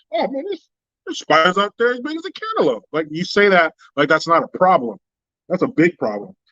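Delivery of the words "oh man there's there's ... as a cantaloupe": put-on nonchalant, offhand, lilting, high-pitched delivery. Retelling what a friend said about spiders: imitating a nonchalant remark. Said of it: "he said all nonchalant".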